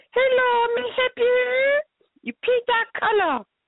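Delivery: really squeaky, very high-pitched, slow voice. Retelling how the woman doing her nails greets customers: squeaky voice imitating a manicurist. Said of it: "in this really, like, squeaky voice".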